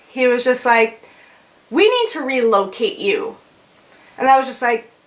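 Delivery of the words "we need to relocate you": ordinary talk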